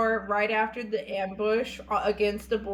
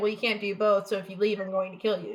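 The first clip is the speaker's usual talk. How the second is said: normal talking voice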